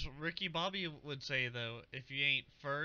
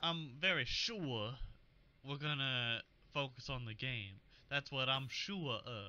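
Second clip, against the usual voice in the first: thick Southern drawl, very slow, every word stretched. Saying it the way Bieniemy would: Bieniemy impression, thick Southern accent. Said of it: "You gotta say it like Bienemy. ... He has that very like thick Southern accent".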